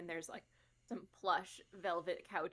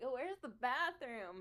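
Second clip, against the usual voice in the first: put-on slow, slightly drunk, lost-sounding drawl, pitched up; 7 semitones higher than usual. Voicing a partygoer looking for the bathroom, acting a little drunk. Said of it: "pretending to be a little drunk".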